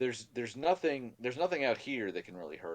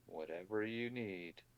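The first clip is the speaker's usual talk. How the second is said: very quiet, hushed, flat, expressionless deadpan; 10 dB quieter than usual. Narrating a scene, voicing a character who agrees to wait, very deadpan. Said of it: "Very deadpan".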